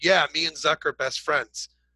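sarcastic delivery. Retelling a prospect's emailed reply: imitating a sarcastic reply. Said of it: "he wrote back sarcastically".

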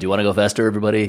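carnival fairground announcer voice, as over a mic. Recalling a childhood dream job on the mic, doing a carnival announcer voice. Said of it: "carnival who would be announcing with the mic".

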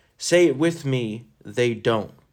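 ordinary talk, nothing marked

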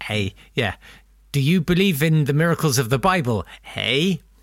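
put-on Canadian accent, "eh" added at line ends. Retelling a conversation with Houdini, speaker tries a Canadian accent. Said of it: "let me try to do my Canadian accent".

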